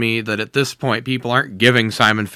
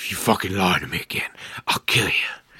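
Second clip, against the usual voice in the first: put-on serious voice, lower in pitch and quieter; 4 semitones lower, 7 dB quieter than usual. Recapping a movie scene, the speaker quotes Simon Phillips' threat; mock-serious Simon Phillips. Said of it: "He's being super serious".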